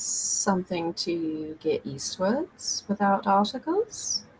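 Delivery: very quiet, barely-there, hushed undertone. Asking in character about travelling east without articles: speaking very quietly. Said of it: "switch to very quietly in Stone Tongue".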